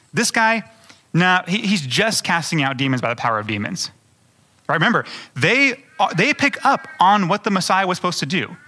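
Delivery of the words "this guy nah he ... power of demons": normal talking voice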